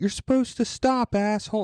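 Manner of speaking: mock furious shriek, very high angry scream. Retelling a texting driver shouting at him, retelling an angry scream. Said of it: "and starts screaming at me".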